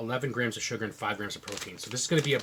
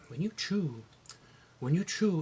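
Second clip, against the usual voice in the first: put-on Portuguese accent, pitched up; 6 semitones higher than usual. Speaker quoting his mother's comment about how he chews, Portuguese accent. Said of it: "in a Portuguese accent".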